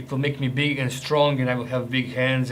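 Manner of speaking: plain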